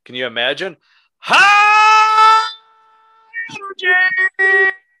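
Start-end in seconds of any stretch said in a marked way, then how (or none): 1.1-4.7 shrieking at full blast, very high, loud, stretched. Naming wild people to see in court: Koko B. Ware screaming "High energy". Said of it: "He would scream it, like, at the top of his lungs".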